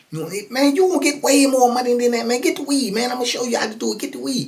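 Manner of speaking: squeaky, very high tone throughout. Retelling an argument over payment, the speaker quotes Boo in Boo's high squeaky voice. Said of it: "Boo got that old high squeaky voice".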